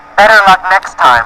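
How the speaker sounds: normal talking voice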